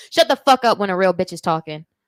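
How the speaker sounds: very loud, bold, forceful chest-voiced delivery. Asked to say the phrase aloud, repeating it with the chest. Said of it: "Say it with my chest".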